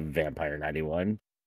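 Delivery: ordinary talk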